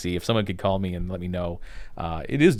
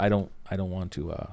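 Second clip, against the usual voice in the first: normal talking voice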